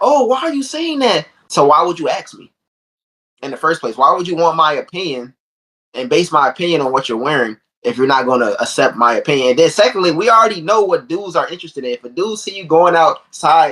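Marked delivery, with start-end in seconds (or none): 0.0-1.3 put-on very high, girly young girl voice. Retelling what she says after asking an opinion: imitating a girl talking. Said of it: "Then she's like".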